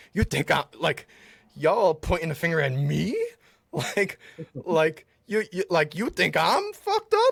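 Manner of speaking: mock speech through laughter, high, swooping words. Retelling a TV scene where Rick laughs at his accusers: imitating Rick laughing while talking. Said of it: "he literally laughs and he's like".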